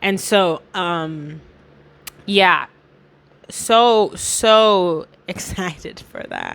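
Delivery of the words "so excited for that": very slow, swooping, laid-on sarcasm, long drawn-out "so". Talking about changes outside one's control that will affect one: heavy sarcasm. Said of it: "That was so much sarcasm".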